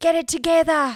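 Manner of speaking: put-on high-pitched, trainer-style yelling in an Australian accent. Joking about a gym where Australians yell at you: imitating a yelling Australian. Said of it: "all these Australians yell at you".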